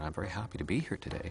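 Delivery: soft, gentle Canadian upward drift on today. Speaker contrasting american and canadian sentence stress, gentle drifting-up canadian intonation. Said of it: "a Canadian has a very gentle drifting up pattern".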